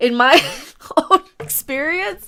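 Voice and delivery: laughing through the words.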